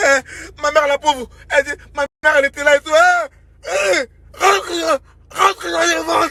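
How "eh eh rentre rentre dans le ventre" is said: very slow, dragged, badly articulated, mangled high speech. Imitating a mother who cannot articulate, telling her child to get back in: imitating unclear, badly articulated speech. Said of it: "parce qu'elle pouvait pas bien articuler".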